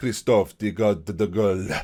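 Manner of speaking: put-on Spanish accent. Introducing a Danish goalkeeper to viewers, the speaker says his name in a fake Spanish accent. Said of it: "I do it in a Spanish accent for no reason at all".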